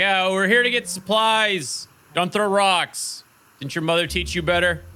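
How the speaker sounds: high, carrying calling voice. Answering a guard on a tower, calling back up to him: calling back up to someone. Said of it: "I call it back to the guy".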